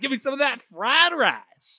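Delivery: put-on high, swooping, bouncy Brooklyn tough-guy accent. Recapping a show's flashback to the Yukihira Diner, doing a Joey Wheeler accent. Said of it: "I lost that accent completely".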